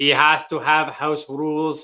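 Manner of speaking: put-on robot voice with Irish Australian accent. Playing a game of speaking as a robot or alien: put-on Irish Australian robot voice. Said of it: "This is my uh my Irish Australian robot, by the way".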